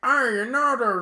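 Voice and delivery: mock country accent, pushed high and loud.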